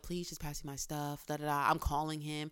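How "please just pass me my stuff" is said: soft, hushed whisper. Retelling asking through a door for belongings: retelling a whisper. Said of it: "whisper through the door".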